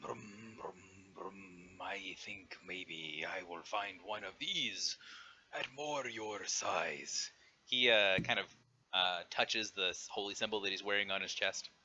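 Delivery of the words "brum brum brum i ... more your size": amused giant voice, chuckling along. Voicing a giant who chuckles at a small adventurer: chuckling giant voice. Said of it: "listens and, and chuckles a little bit".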